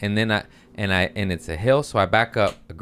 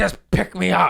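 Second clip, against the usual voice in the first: put-on feisty voice, pitched higher; 10 semitones higher than usual. Retelling the fallen man asking to be picked up, imitating a feisty man. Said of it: "And he was all feisty".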